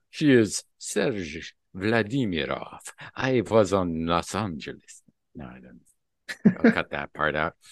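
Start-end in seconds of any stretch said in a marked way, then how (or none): 0.2-5.1 slow, drawled, put-on Russian accent. Speaker announces he will do his accent, then speaks in it, Dracula-like Russian accent. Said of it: "Let me do my Dracula-like accent here".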